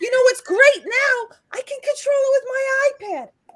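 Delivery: very high-pitched voice. Retelling what a man said to the speaker: imitating a very high-pitched voice. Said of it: "he's got this very high-pitched voice".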